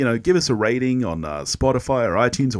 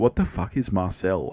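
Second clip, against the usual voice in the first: usual speaking voice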